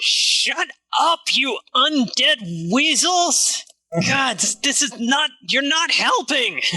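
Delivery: furious, angry shouting, pitched high. A player's character yells at undead creatures during a fight, angry yelling. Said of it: "I yell at the".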